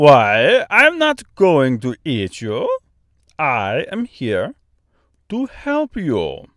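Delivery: put-on strange Austrian accent laced with French. Narrator reads a giant bird's reply to Dorothy, thick Austrian-French accent. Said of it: "strangely thick, almost Austrian accent, mixed with a French accent".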